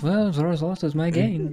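frantic mumbling under breath. Playing a character picking up dropped items, mumbling to himself. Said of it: "I'm just mumbling to myself".

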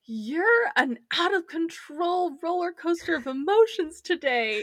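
shouting, high-pitched voice. Recapping a scene where one character yells at another: retelling a yell. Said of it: "he yells at her".

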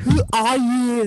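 Austrian-accented delivery. Having a go at a quoted line: sounding like Arnold. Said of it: "You sound like Arnold".

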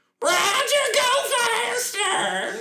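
exaggerated West Virginia holler, very high, swooping and loud. Mocking how a 1960s west virginia woman would sound yelling at someone, mock west virginia woman yelling. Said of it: "what we think a West Virginia woman in the 60s would sound like yelling".

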